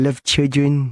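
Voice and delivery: put-on childlike voice on the word children. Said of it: "He had a really weird way of saying children".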